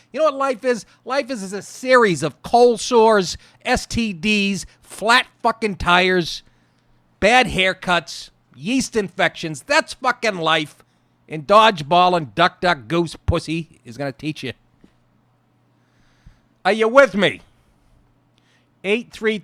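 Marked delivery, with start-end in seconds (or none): 0.1-17.4 worked-up, heated ranting. Ranting about what life really is to listeners: yelling. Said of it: "I know I'm yelling".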